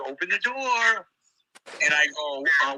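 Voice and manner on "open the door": sugary-sweet, high voice. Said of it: "it's like she was real sweet".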